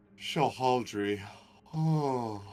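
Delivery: quiet, mumbled sleep-talking. Acting out a sleeping character talking to himself: quietly mumbling in sleep. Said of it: "he's kind of quietly, like, talking to himself".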